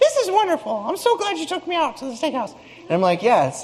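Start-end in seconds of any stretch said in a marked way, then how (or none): 0.0-2.5 very high-pitched voice. Telling a steakhouse dinner story, quoting his wife, impersonating his wife. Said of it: "my impersonation of my wife".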